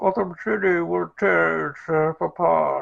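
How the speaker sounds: slow, loud, muffled closed-mouth villain voice. Going through impressions, now a hard one: Bane voice, mouth almost closed. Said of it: "almost don't open your mouth because the mask".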